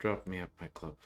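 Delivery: soft-spoken, quiet, numb, almost empty voice. In a roleplay, Vivi finally speaks up in a soft, numb voice. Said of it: "in a soft, numb voice almost".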